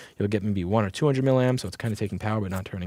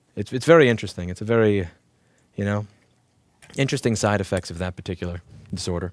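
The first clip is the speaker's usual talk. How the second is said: ordinary talk, nothing marked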